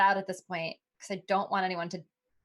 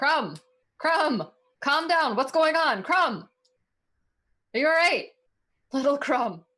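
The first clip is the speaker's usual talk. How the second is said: loud, high-pitched yelling; 7 semitones higher, 6 dB louder than usual. A player's character calls out to an upset companion, yelling to a companion. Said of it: "So I'm gonna yell at him".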